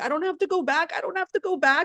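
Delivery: high, tearful crying voice. Recalling hanging up and looking over at her husband, imitating own crying. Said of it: "I just started crying like a baby".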